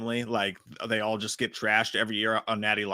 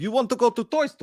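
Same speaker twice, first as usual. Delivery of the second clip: very high-pitched fake Russian accent; 13 semitones higher, 5 dB louder than usual. Retelling talking to the kids in the car: put-on Russian accent. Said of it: "I do it to the kids sometimes".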